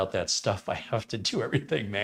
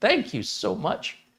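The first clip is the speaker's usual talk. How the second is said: voice cracking and breaking, very high; 10 semitones higher, 4 dB louder than usual. Thanking a chat member for an Amazon gift card, voice cracking. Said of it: "My voice just cracked".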